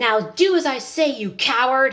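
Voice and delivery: loud outburst at full voice. Storyteller voicing a character who speaks to the king, saying it loudly. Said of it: "He says that part loudly".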